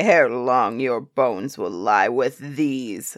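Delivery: booming, very low, loud giant's bellow. The giant threatens Jack in his castle courtyard, bellowing. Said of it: "the giant bellowed".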